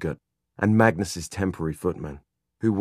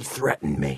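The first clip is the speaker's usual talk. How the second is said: serpent-like hiss, barely human; 4 semitones lower than usual. The one ordered to let no one in reports being threatened, hissing, not quite human voice. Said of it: "in his hissing, not quite human voice".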